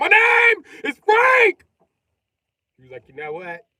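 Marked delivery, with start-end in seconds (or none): 0.0-1.7 sharp, very high, loud, very slow drawn-out snap. Speaker retelling Francesco's reply to the other man, imitating Francesco snapping. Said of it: "Francesco snapped".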